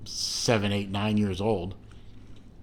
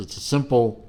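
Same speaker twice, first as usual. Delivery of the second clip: ordinary delivery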